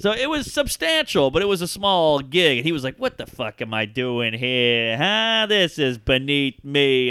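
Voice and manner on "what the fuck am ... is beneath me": slow, drawn-out delivery. Retelling what a comedian said on stage: imitating the Dice. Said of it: "you're the Dice".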